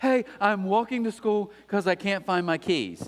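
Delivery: put-on breathless, panting voice. Retelling a phone call from his wife: imitating someone out of breath. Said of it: "she's out of breath".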